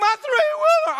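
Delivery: put-on crying. Retelling seeing a new three-wheeler sink: retelling own crying. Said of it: "I'm crying".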